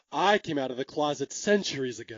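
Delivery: low, very deadpan, play-acted delivery, no fuss. Retelling a character's line from a movie: deadpan Cleavon Little delivery. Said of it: "said in a very deadpan Cleavon Little way".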